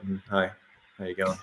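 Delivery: very quiet, subdued, low-key introverted voice. Contrasting radio and real life, imitating own introverted real-life greeting. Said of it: "when you meet me in real life, I'm like".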